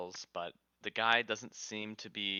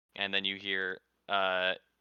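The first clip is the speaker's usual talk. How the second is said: normal talking voice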